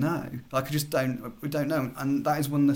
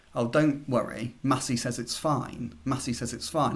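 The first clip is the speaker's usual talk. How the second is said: plain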